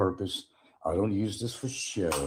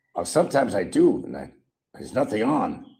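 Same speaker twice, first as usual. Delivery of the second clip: rough, scratchy, raspy put-on voice; 3 semitones higher, 8 dB louder than usual. Repeating own line as an imitation: raspy Mad Matthew voice. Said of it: "Sounds like Mad Matthew, doesn't it? Graspy voice".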